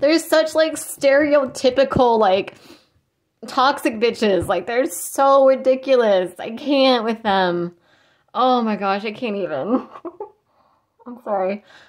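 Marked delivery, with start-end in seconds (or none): 8.3-11.6 talking through giggles, laughing while speaking. Talking about people they find ridiculous, giggling while talking. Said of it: "I need to stop giggling".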